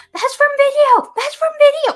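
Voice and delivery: imitated loud shouting. Retelling watching the other speaker's video on tv: retelling own yelling at tv. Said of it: "yelling at the T V".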